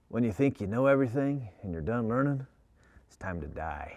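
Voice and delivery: put-on rasping, gravelly old-west cowboy voice. Quoting a man's advice heard as a child, in a deep, gravelly cowboy voice. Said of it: "he had this deep, gravelly voice".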